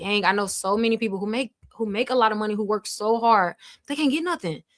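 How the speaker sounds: ordinary talk, nothing marked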